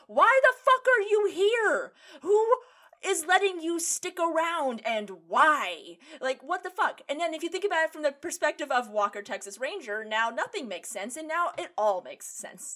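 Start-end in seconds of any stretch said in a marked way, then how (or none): 0.2-7.0 exasperated, high, loud, drawn-out yell. Retelling reactions to a tv episode: imitating someone screaming at the tv. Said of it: "screaming at this, uh, my T V going".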